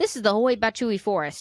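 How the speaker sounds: said with full confidence and assurance. Retrying a hard forest name after stumbling, confident delivery. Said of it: "let's just say it like we're confident".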